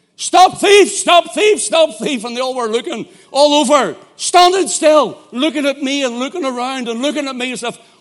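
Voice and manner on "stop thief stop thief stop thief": urgent, loud, high, alarmed yelled shout. Retelling how the speaker shouted into the mic to a crowd: imitating own shout. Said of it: "I started shouting".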